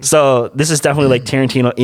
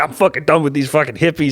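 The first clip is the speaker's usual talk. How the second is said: put-on disgruntled old man voice, higher pitched; 3 semitones higher than usual. Retelling a movie scene, quoting Rick: imitating disgruntled Rick. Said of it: "He was all disgruntled".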